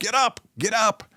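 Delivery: put-on urgent yell, said twice. Watching the leopard run off, the speaker urges the downed impala, yelling. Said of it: "I am yelling at the impala".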